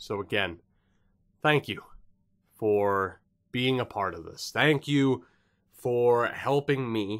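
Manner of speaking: teary voice breaking mid-phrase, halting words. Thanking viewers for being part of the channel, tearing up while thanking. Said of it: "I'm not tearing up".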